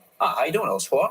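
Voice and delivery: put-on highfalutin, refined upper-class New England accent. Demonstrating how the character greets someone: highfalutin New England accent. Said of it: "highfalutin New Englandy sort of accent vibe".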